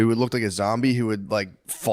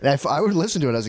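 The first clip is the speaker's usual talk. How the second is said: ordinary delivery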